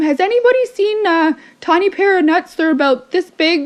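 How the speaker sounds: loud, high-pitched shout. Retelling a movie scene where a character calls into a conference room, retelling Sandra Bullock's yell. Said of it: "yells out into the conference room".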